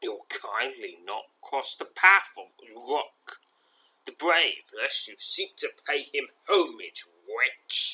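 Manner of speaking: scornful, bullying, sneering tone. Narrator voicing a vulgar young man blocking the listener's path, sneering. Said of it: "he sneers".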